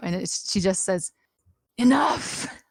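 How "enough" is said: strange, high, scratchy, raspy voice. Trying out an impression of what she says: weird raspy voice. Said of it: "this weird raspy voice that I'm going to try and do".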